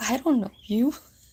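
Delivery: calm, cool, unruffled, unbothered delivery. Retelling a man screaming at them, imitating Frances replying with put-on calm. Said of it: "real calm".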